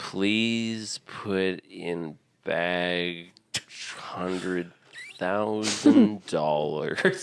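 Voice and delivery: play-acted very slow, dazed, stoned drawl. Quoting the ransom letter voiceover: the Dude's stoned voice. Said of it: "it's the most stoned voice".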